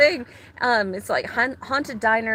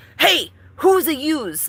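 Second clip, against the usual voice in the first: loud, slow tough-guy gangster voice; 5 semitones higher, 5 dB louder than usual. Retelling a voice that spoke right in their ear, in a gangster voice. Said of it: "there was this gangster voice that says".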